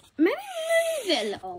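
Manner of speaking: very high, slow, squeaky, silly voice.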